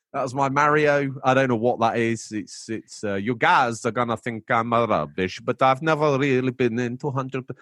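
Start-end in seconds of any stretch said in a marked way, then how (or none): 1.2-7.4 Transylvanian-sounding accent. After doing a Mario voice, the speaker talks on in a Transylvanian-sounding accent. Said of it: "I sound like I'm from Transylvania".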